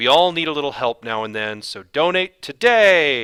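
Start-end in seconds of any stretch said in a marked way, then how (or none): 1.6-3.2 raised, loud voice, "today" stretched, ending pushed. Ending a donation appeal like an exclamation point, with a raised voice. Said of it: "when I raise my voice like that".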